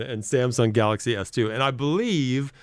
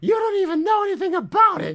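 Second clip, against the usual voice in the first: very high-pitched, worked-up, upset voice; 3 dB louder than usual. Retelling an argument about a new phone, imitating a friend's high upset voice. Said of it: "his voice goes really high".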